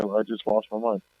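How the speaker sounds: ordinary delivery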